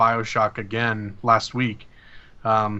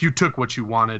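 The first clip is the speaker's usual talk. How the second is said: put-on, exaggerated very angry voice. Retelling a game's ending speech from a very angry character: mock-angry. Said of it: "she's very, very angry".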